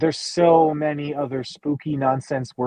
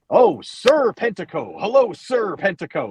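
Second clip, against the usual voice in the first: mocking tone.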